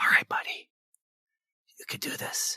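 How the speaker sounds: soft, gentle, encouraging, coaxing whisper. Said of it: "I'm gonna do some hippogriff whispering now".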